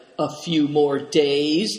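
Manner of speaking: distrustful. Narrator reads a character replying to one who just ordered quiet, distrustful. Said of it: "asked Yuchi distrustfully".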